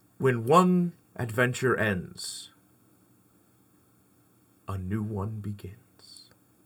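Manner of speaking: epic movie trailer announcer voice. Asked by the others to perform a trailer: movie trailer announcer voice. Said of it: "Let's do the first ever, you know, honest movie trailer".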